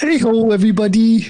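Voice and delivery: way up high and loud, puppet-style voice. About to start recording, the speaker tries the greeting as the others ask: Kermit the Frog voice. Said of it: "Should I do it in Kermit's voice?".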